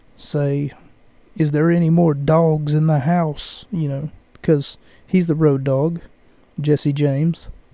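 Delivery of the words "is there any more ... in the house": plain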